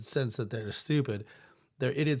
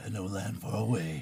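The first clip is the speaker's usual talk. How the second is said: strong, deep movie-trailer announcer voice; 4 semitones lower, 4 dB quieter than usual. Showing how the person who does movie previews sounds: movie trailer announcer voice. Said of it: "you could do like you know the person that does like movie previews".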